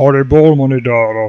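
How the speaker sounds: put-on typical deep German accent. Retelling a voice heard while eating near a temple, typical deep German voice. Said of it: "Typical German deep voice".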